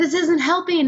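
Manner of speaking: acted, high, agonized scream of pain. Retelling reacting to her husband rolling Coke cans on her back, retelling a scream. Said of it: "I'm just screaming".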